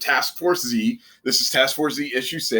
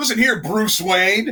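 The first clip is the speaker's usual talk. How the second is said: confrontational, raised, pitched-up shouted yell; 8 semitones higher than usual. Joking about what a character yelling at Batman could have said: mock yell. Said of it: "he might as well have just yelled".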